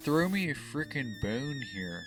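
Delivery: put-on villain accent, character voice. Repeating the line to show whose voice it was: Doctor Evil voice. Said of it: "He's like".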